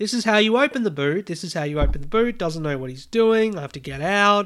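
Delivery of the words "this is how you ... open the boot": put-on high-pitched screaming, repeated over and over. Retelling screaming at a man who can't open the car boot: retelling screaming at someone. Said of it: "I'm like screaming at him".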